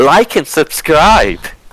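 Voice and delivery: exaggerated hype-host energy. Showing how you need to say like and subscribe, overly animated. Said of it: "you need to say it in an overly animated voice".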